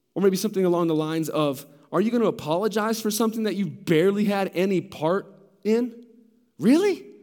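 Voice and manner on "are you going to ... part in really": condescending, scornful, critical, sarcastic tone. Acting out a skeptic questioning staying pure: acting out a sarcastic, scornful question. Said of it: "Can you hear kind of the animosity".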